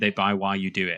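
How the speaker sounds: usual speaking voice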